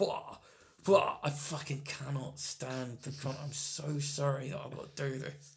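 put-on ranting voice. Showing a comedy bit done as Boris Johnson. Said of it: "I'll be doing Boris Johnson bits like".

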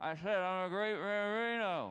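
put-on muffled, mashed words. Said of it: "Take that thing out of your mouth".

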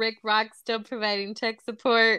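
ordinary talk

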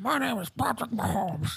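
high soft puppet voice.

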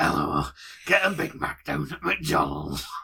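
low, slow, deliberate delivery. Mocking a man in a video: imitating Bernard Manning voice. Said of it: "He started talking like Bernard Manning".

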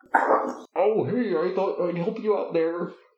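high giant monster voice. Joking about an echoey room, one speaker answers in a Godzilla voice. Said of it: "I see your Godzilla voice".

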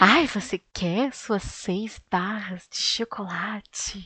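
put-on sultry, sensual, seductive voice. Retelling a film scene where the woman offers chocolate: imitating a sensual voice. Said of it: "ela fala uma voz sensual".

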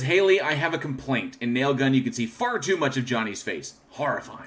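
ordinary talk

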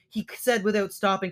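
usual speaking voice

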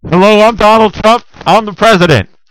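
very high, very loud, shrill belted voice. Holding a handkerchief over the mouth, doing a Donald Trump impression. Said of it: "I will instantly sound like our president, Donald Trump".

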